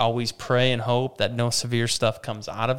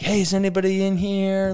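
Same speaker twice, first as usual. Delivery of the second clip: play-acted, high-pitched shouting; 8 semitones higher, 3 dB louder than usual. Retelling a man banging on rolled campers looking for people: imitating someone shouting. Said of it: "he's banging on campers that have rolled".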